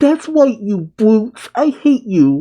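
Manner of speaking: high, swooping cartoon voice with swinging tune. Retelling a pirate princess's line in a Betty Boop voice. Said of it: "almost like in a Betty Boop voice".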